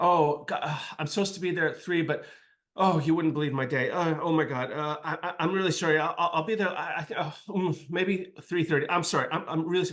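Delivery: put-on frazzled, stammering, tripping-over-words ramble. Retelling a late woman's answering machine message, imitating a flustered woman. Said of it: "she was like all flustered".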